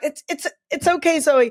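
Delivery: stammering on the opening "it's", repeated. Retelling how a jockey called someone over: imitating a stutter. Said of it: "he had a stutter".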